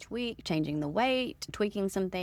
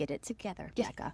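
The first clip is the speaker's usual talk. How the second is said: put-on motherly voice, quieter; 6 dB quieter than usual. Retelling own self-talk while running: put-on mom voice. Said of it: "It's my mom voice".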